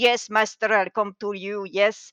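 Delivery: put-on Slavic-accented voice. Recalling Igor from the old Frankenstein movies: Igor voice with Slavic accent. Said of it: "Igor, who have a Slavic accent".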